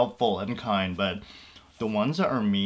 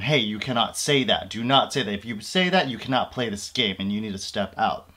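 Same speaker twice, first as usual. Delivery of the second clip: mock, very stern, firm no-nonsense voice. Retelling how she was taught to tell off players, in a mock-stern voice. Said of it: "in a very stern voice tell them".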